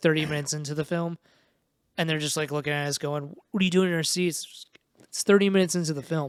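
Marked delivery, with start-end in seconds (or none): none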